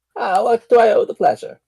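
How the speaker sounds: put-on sweet, high little old lady voice. Game master voicing a woman who has just made tea, sweet little old lady voice. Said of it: "Sweet little old lady sounding".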